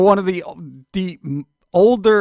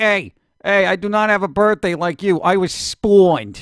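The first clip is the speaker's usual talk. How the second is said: imitated, mock New York accent. Host quoting what a robot said, imitating a new york accent. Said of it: "said spawned like a New Yorker".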